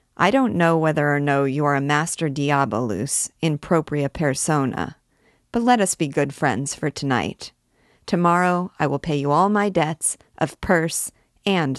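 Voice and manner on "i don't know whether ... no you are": ordinary delivery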